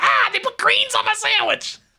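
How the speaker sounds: very high, frantic, panicky, freaking-out voice. Imitating Bubba freaking out in a drive-thru: imitating Bubba freaking out. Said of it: "freaking out in the drive-thru".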